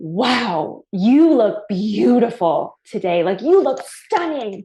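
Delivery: over-the-top theatrical, slow drawn-out "wow". Retelling a man in a parking lot complimenting them, imitating a very dramatic voice. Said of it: "This guy in the most dramatic voice".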